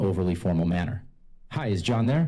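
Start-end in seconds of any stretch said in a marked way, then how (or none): 1.5-2.3 upbeat friendly tone, much higher. Speaker demonstrating how to greet a prospect, upbeat tone. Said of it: "In an upbeat tone".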